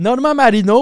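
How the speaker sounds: very high, very loud, shrill yell with rolled R. Retelling how a man said a name in an interview, retelling a loud shout with rolled R. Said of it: "il dit ça super fort".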